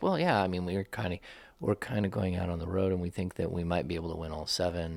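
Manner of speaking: understated, quiet delivery, dwindling away. Speaker acts out a man's quiet remark, imitating a quiet reply. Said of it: "he kind of quietly said".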